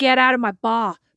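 put-on Australian accent drifting American. Retelling what Jack said to someone, imitating Jack's quasi-American Australian accent. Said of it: "with his quasi-American Australian accent".

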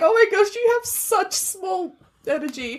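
play-acted cackling voice, pitched very high. Retelling own reply to an insulting remark: retelling own cackling reply. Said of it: "I literally just cackled and was like".

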